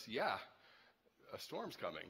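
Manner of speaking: mock low, quivering, uneasy, anxious murmur. Retelling what a man on the boat said to the speaker, imitating an anxious, quivering voice. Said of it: "with like some angst in his voice and a little bit of quivering".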